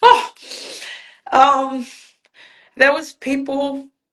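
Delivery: voice breaking into tears, very slow, halting, high. Explaining why the anthem made them cry: starting to cry. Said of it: "I'm gonna start crying now".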